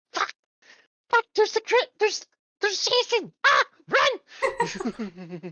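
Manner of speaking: very high puppet voice with a swooping, swinging pitch. Imagining Elmo playing Dead by Daylight, in an Elmo voice swearing. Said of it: "you hear Elmo swear and be like".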